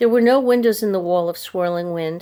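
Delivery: ordinary delivery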